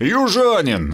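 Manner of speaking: begrudging, grumbling, high-pitched single word. Reading a novel, a character answers a companion's boast, grumbling. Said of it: "буркнул Сомов".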